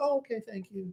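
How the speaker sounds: soft, very polite tone. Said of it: "but I'm very polite".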